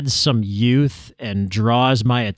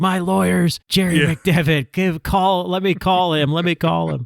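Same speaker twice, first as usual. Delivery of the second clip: high, drawn-out, pleading screaming; 7 semitones higher than usual. Retelling a scene where Vince McMahon is dragged out by cops: imitating Vince McMahon screaming. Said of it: "Vince was screaming, like".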